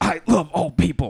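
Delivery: words coughed out, loud and very slow. Showing another speaker how to cough words out: coughing the words. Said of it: "you cough in the words".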